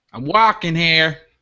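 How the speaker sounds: put-on Brooklyn-style New York accent. Imitating a brash New Yorker passing on the street: put-on New York accent. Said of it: "Aussies Doing American Accents".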